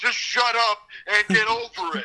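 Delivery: furious dismissive outburst. Retelling a wrestler's promo against a rival: imitating an angry rant. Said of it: "K O goes off on Dolph like".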